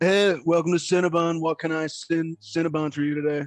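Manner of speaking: relaxed, laid-back, chill surfer dude voice. Voicing a surfer dude at the Cinnabon register: surfer dude voice. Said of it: "kinda surfer dude at the".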